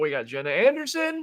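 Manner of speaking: put-on old Wild West gold prospector voice. Introducing the next guest, in an old prospector voice. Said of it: "why do you sound like an old prospector?".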